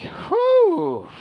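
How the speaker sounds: fed-up, exasperated sigh, swooping. Voicing a character who sighs as the last person leaves: exasperated sigh. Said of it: "Pella just give out an exasperating sigh".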